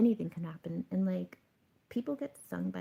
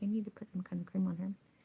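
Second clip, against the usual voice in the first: frantic, hurried, insistent delivery. Retelling asking a security guard for help with a crying baby: retelling own frantic words. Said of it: "But I was, like, frantic".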